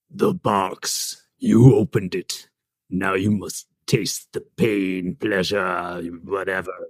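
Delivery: very low, deep, slow, drawn-out horror-villain voice. Taking a turn voicing a Pinhead line: Pinhead impression.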